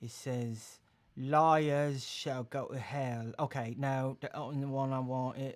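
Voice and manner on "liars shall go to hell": slow, awful, terrible put-on British accent. Reading a scripture line aloud, terrible british accent. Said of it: "A terrible British accent".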